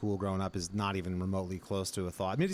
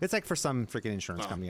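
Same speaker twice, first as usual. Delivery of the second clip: normal talking voice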